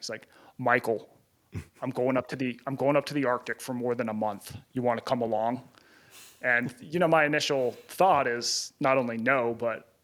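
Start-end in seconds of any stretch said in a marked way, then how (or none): 0.6-5.6 put-on Minnesota accent. Retelling a friend's phone invitation, in a Minnesota accent. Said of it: "he's got this Minnesota accent".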